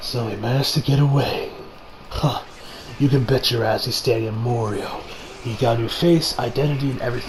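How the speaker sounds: cool stoic hero voice, low and quiet.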